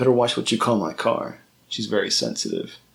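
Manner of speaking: ordinary delivery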